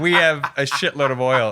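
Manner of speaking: normal talking voice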